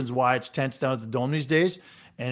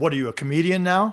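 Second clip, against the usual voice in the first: acted, mock-angry tone; 4 semitones higher than usual. Recounting a man's reply after seeing the speaker's tweet, retelling an angry retort. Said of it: "kind of all angry".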